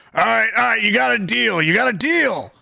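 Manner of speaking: hurried, fast, rough, high-pitched shout. Game master voices a cornered Caden calling to the space around him, Caden shouting out. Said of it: "he kind of just shouts out to the space around him".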